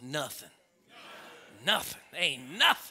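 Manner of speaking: revival-preacher-style delivery. Speaker addressing the church shows how: saying it like a Pentecostal. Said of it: "Now say it like a Pentecostal".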